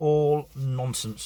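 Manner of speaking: all stressed, drawn out, slow and weighted. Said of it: "repeats it, slower then plain".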